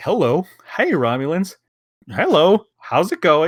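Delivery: put-on easygoing, chummy, breezy friendly voice. Retelling a scene where Picard greets the Romulans, imitating Picard's friendly greeting. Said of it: "And he's like friendly".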